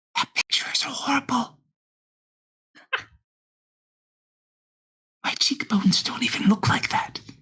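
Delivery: hushed, quiet whisper. Game narrator voicing a man who whispers over to a player, whispering. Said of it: "He kind of whispers over to you".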